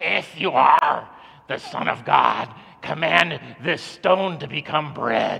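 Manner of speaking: rough growling voice. Retelling the devil tempting Jesus, voicing the devil in a devil voice. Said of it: "let me do my devil voice here".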